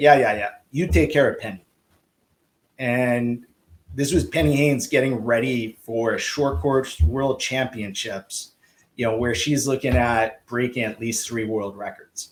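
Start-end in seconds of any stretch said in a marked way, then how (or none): 0.0-1.6 bad fake Czech accent, faster. Speaker quotes a man's reply about nationals: bad czech accent. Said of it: "that's a really bad Czech accent".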